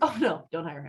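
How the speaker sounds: plain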